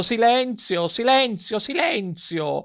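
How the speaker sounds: very high, shrill, furious shout of rage and tears. Narrator reads a man pounding the table over the growing noise, shouting in anger and tears. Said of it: "gridava con voci di rabbia e di pianto".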